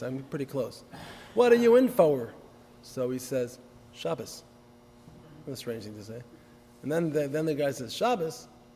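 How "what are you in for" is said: loud, high, hardened put-on Texas drawl. Telling a joke where one prisoner asks another what he's in for, in a Texas accent. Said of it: "I think that's how they say it in Texas".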